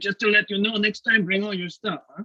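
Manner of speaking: put-on high French-accented voice. Retelling what a man at a show told the speaker, French accent. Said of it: "got this French accent".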